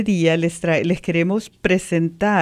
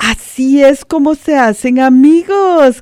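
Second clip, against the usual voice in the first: joyful shout, high and drawn out; 7 semitones higher, 8 dB louder than usual. Narrator reads Pata Blanca after greeting the lake rabbit, shouting with joy. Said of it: "gritó Pata Blanca de alegría".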